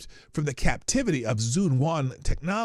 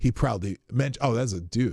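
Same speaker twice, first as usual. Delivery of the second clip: normal talking voice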